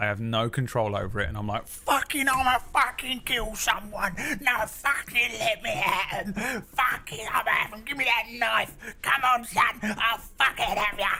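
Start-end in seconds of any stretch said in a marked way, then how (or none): 1.7-11.1 acted out, very high, crazed, frenzied goblin rage. Acting out turning into a furious nineteen-year-old self: mock goblin rage. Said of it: "transforming into a fucking level six goblin".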